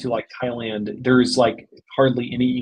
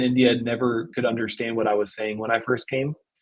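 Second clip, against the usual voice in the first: ordinary talk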